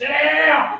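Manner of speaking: very high, shrill, loud put-on trailer-park holler. Describing a trailer park Karen, the speaker acts out her yelling at a kid. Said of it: "yell at some kid".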